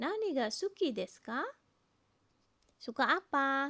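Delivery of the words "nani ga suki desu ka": rising tune lifting on final "ka". Explaining how to ask what someone likes in Japanese: rising pitch on final ka. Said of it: "Intonasi naik ya".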